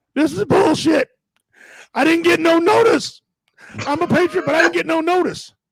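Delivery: put-on outraged rant, high and screamed. Recounting a lady who came out of her house screaming, imitating a lady screaming. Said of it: "she was screaming".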